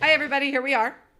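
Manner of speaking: excited, rushed, rattled-off, high and loud. Greeting everybody at the start of the podcast, said super fast. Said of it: "I just said that super fast".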